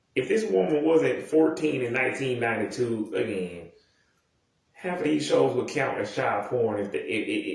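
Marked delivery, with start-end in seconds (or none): none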